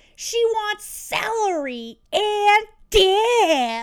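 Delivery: very loud, very slow, teasing holler. Retelling a brother yelling up the stairs to mom, a mocking yell. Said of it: "And my brother just yells".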